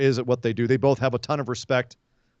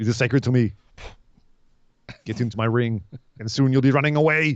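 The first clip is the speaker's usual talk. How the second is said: put-on Austrian accent. Trading taunts with a rival wrestler, in Walter's Austrian accent. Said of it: "Walter actually has an Austrian accent".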